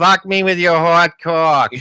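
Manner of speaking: disinterested, bored, flat Boston drawl. Acting out a Boston hooker smoking a cigarette: disinterested Boston hooker voice. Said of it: "the disinterest in the voice almost".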